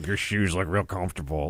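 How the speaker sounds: put-on grunty, gruff southern drawl. Speaker imitates how a certain actor talks, in a grunty southern accent. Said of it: "that's how he talk".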